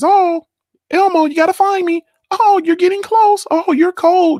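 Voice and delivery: put-on very high, slow, drawn-out childlike talking-doll voice. Describing a talking toy in a hide-and-seek game with his daughter, Elmo voice. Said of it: "in his Elmo voice".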